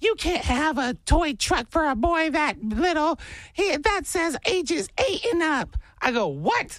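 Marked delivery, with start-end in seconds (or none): 0.0-5.8 mock, very high-pitched woman's voice, angry yell. Retelling how a lady yelled at the speaker the other day: retelling a lady's yelling. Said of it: "yelled at me and goes".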